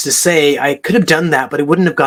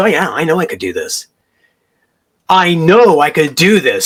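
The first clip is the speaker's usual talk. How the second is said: firm, strong, self-assured, confident voice. A coach retelling a prospective client's reply, imitating a strong voice. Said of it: "Strong voice".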